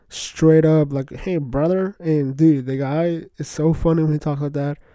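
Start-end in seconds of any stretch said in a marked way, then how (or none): 1.1-1.9 put-on heavy country southern accent. Imitating a UFC fighter from Arkansas he likes, heavy country southern accent. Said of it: "He's got like the heaviest country southern accent I've ever heard".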